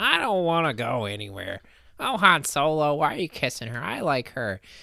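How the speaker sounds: whiny voice, pitch swooping up and down. Mocking a complaining character from Star Wars: whiny Luke Skywalker impression. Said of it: "He complained and whined about everything".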